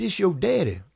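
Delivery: loud, strong, powerful fatherly voice. Speaker retells his father's phone call, imitating his father's powerful voice. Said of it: "Just like that".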